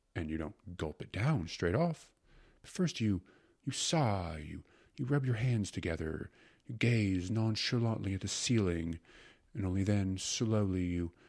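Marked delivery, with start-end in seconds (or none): none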